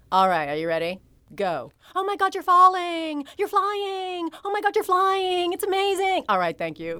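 very high, animated, swooping casting agent voice. Retelling an audition, the speaker voices the casting agent directing her: imitating casting agent's voice. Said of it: "talking in the casting agent's voice".

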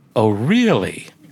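exaggerated, overdone voice laid on thick. Retelling overhearing his mother talking to someone, the speaker quotes her exaggerated voice. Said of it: "in a rather exaggerated voice".

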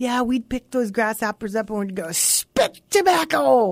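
put-on high-pitched German accent. Retelling what a girl she knew as a kid said, in a german accent. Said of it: "with her German accent".

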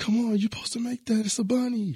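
very high, loud sideline-style yell. Retelling family at a basketball game after a missed layup: imitating family yelling. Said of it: "all my brothers and my mom and dad yelling at me like".

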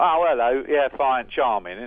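mock, fake Cockney accent. Speaker shows how easily they fall back into a put-on Mockney accent. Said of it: "a sort of Mockney voice".

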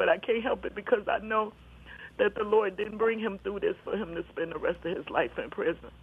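emotional, crying while speaking, tearful. Speaking about praying for Keith to come home one day: emotional, crying. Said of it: "I know I'm getting emotional and crying and stuff".

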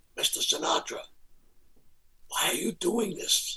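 hushed, soft whisper under the breath. Retelling asking the host why he is doing this: retelling a whisper. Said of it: "So I start whispering to him".

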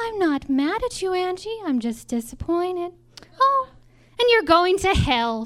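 put-on sugary, sweet grandmotherly old-lady voice. Retelling what she'd say when told you're skipping church, imitating her sweet voice. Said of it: "she'd say in her sweet voice".

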